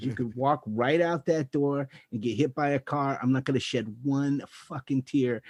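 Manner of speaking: put-on New York guy accent. Speaker retelling what a man doing stand-up told him: New York accent impression. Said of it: "total New York guy".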